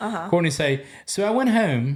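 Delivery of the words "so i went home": weird put-on British-like pronunciation, much higher pitched. Show how Courtney says a word differently from you, in Courtney's weird British-sounding pronunciation. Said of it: "she pronounces certain words weird, like a British person".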